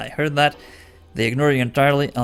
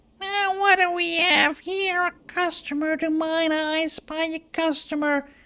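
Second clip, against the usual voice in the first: very high, nasal, braying voice; 4 dB quieter than usual. Voicing a shopkeeper woman with a nasal voice who brays out. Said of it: "nasal voice, brays out".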